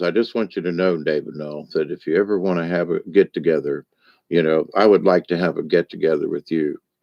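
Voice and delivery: real deep, low baritone voice. Retelling what a man said to him in a dressing room, imitating a deep baritone voice. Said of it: "he's got this real deep sort of baritone voice".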